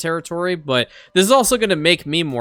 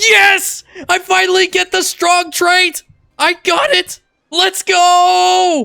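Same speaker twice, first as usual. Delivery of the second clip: very high, very slow, drawn-out excited scream; 7 dB louder than usual. A player finally gets the strong trait in the game; screaming excitedly.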